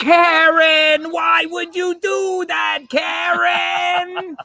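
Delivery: shrill, very high-pitched yell, dragged out long. Act out the man in the movie addressing Karen, imitating the Goodfellas yell at Karen. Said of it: "more yelling at Karen from the movie".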